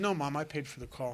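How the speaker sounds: normal talking voice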